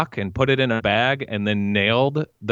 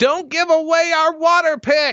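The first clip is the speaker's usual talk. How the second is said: very high-pitched, shrill yelling; 4 dB louder than usual. Quoting a favourite line from a TV show character: imitating someone yelling. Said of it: "She yells at".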